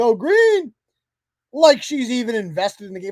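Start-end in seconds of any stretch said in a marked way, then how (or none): 0.0-0.7 acted-out cheering yell, pitched up. Retelling what a woman at the game did: imitating someone yelling. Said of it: "She yells".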